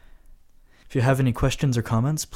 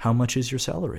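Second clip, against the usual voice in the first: ordinary talk, nothing marked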